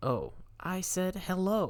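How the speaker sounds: very slow, high-pitched put-on disguise voice. Reading a character lying to their mom, in a high-pitched voice. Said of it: "using the best high-pitched voice I could muster".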